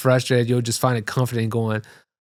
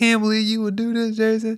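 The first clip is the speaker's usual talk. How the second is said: put-on, very high, tearful crying outburst; 10 semitones higher than usual. Retelling what a woman said leaving the club: imitating someone crying. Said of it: "she was kinda crying on the way out".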